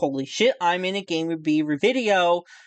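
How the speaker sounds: plain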